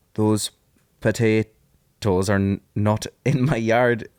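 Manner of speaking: put-on attempted Scottish accent. Asked by the other speaker to try it, saying the line in a Scottish accent. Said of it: "in your best Scottish accent".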